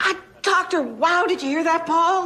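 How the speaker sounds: nearly shouting. Asking a partner who is hard of hearing whether he heard: almost yelling. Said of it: "I'm almost yelling".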